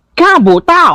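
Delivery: very high put-on character voice.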